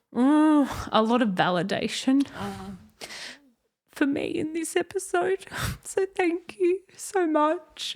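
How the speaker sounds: crying through the words. Thanking someone at the end of a podcast episode, crying while talking. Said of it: "Sorry I didn't want to cry".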